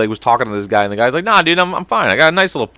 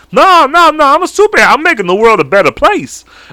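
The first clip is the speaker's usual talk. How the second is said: very high, loud, goofy silly voice; 12 semitones higher, 5 dB louder than usual. Acting out a made-up superhero who kills people: put-on character voice. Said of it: "I just started doing this voice".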